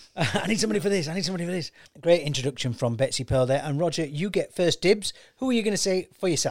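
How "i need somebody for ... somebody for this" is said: harried, fretting, flustered repetition. Imitating Roger driving over while he picks guesses: imitating Roger flustered. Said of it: "he's literally driving over going".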